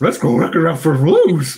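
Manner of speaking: goofy, loud cartoon dog voice, swooping pitch. Doing the voice just asked for at the table: Scooby-Doo voice. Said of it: "Can you say that in a Scooby-Doo voice".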